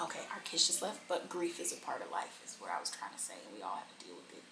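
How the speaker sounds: barely audible, soft, hushed whisper. Talking about grief so the kids will not hear, whispering. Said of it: "Why are you whispering?".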